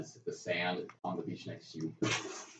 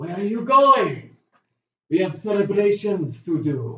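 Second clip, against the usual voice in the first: very loud, very high, drawn-out call; 12 semitones higher, 15 dB louder than usual. Voicing a character who calls after the departing group: calling out. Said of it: "he calls out in Draconic".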